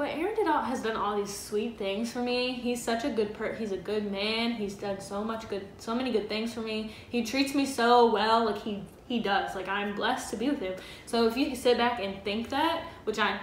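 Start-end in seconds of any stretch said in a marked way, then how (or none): none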